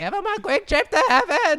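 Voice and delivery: very high, ridiculous, squeaky kung-fu master voice. Describing how the guy who masters Tai Chi talks, imitating a high-pitched voice. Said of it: "your voice goes high pitch".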